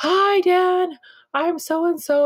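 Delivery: very high, stretched-out, drawn-out yelling. Retelling a caregiver arriving at the door: imitating someone yelling. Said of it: "she's yelling and screaming".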